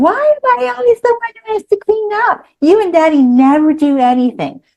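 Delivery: put-on high-pitched, dramatic six-year-old's tantrum voice. Speaker retells her daughter's reply when asked to clean up, in a mock six-year-old tantrum. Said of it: "launches into her Oscar-worthy tantrum".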